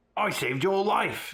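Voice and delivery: high, angry yell. Reading a story aloud, voicing Hagrid's reply: yelling angrily. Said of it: "he yelled angrily".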